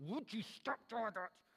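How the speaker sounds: soft, stern speech through clenched teeth. Speaker acting out a dad at church scolding his kid, through gritted teeth. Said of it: "kind of grits his teeth".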